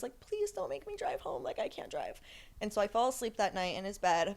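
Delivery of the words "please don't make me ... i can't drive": put-on, breathy, whispered, tearful, crying voice. Retelling own plea after being kicked out: imitating own crying plea. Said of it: "I was crying".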